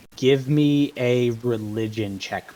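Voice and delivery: plain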